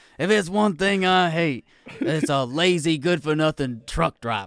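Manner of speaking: tough, trash-talking wrestling-star promo voice. Recalling a favourite wrestling bit, quoting Stone Cold. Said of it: "I love that bit when he was like".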